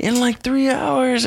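yelling at the top of the lungs.

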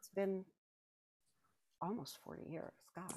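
tearful voice catching, choking up. Recalling a meeting with a PFC almost 40 years ago, tearing up. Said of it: "I'm going to tear up".

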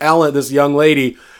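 ordinary talk

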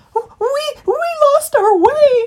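shrill, very high, loud, drawn-out squeak. Woken on a tree stump by a fox, a trespasser answers, squeaking. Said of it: "squeaked Christopher".

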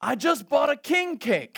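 play-acted, loud, high-pitched shouted yell. Retelling a phone call where a friend yelled out news: imitating a friend yelling. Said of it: "he just yells out".

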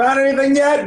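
mock shouting. Retelling a favourite stupid joke, acting out the punchline: retelling a shout. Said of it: "and he's like shouting it".

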